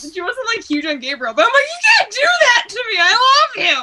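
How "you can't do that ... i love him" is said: tearful, sobbing crying, very high. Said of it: "I'm crying".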